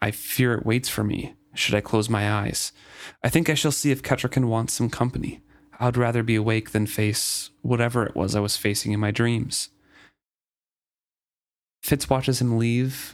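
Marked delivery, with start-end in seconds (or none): none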